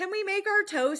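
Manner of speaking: put-on strong, prominent Pittsburgh accent. Retelling how Kaylor asked about toasties: imitating Kaylor's Pittsburgh accent. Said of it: "prominent accent of, like, that of Pittsburgh".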